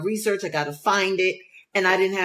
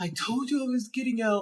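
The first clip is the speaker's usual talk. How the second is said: put-on higher-pitched grouchy old grandpa grumble; 4 semitones higher, 5 dB quieter than usual. Imitating a grouchy teenage son: grouchy old grandpa. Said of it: "He's like an old grandpa".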